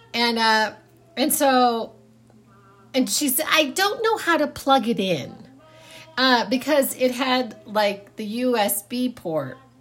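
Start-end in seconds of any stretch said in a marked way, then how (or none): 3.5-5.4 high-pitched, unsure motherly voice. Retelling a phone call about a new CD player, imitating Mom. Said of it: "an impression of my mother so well".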